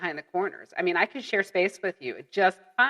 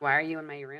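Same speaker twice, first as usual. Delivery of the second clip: put-on ghostly voice, lower and quieter; 4 semitones lower, 6 dB quieter than usual. Acting out an apparition at a family dinner: voicing a ghost. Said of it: "just this apparition that's just standing there".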